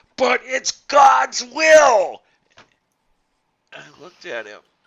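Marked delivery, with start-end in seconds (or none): 0.2-2.3 very loud, high, shrill yell, "will" stretched. Retelling how the instructor answered a student in class: imitating someone screaming. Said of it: "he literally screamed at me".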